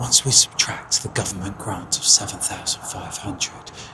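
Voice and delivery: whispered. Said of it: "Why am I whispering?".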